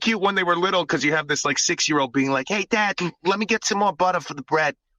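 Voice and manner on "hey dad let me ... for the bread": high, light put-on New York accent in a child's voice. A dad recalling his young kids back from Long Island, imitating a kid's New York accent. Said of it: "a little bit of a New York accent".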